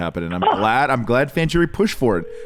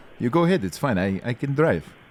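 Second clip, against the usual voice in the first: put-on Spanish-accented voice; 2 semitones higher than usual. The driver answers a passenger's question in the vehicle, in a Spanish accent. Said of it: "You're the only one who can do a Spanish accent".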